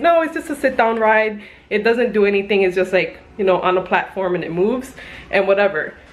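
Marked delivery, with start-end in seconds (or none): none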